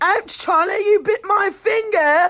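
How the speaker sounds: put-on English accent. Demonstrating talking to a pet cat after it bites, English accent. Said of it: "talk to him in an English accent".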